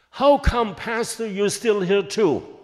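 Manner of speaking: very loud, high, upset screaming. Retelling how the lady screamed at the pastor: imitating a lady screaming. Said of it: "she screamed and screamed".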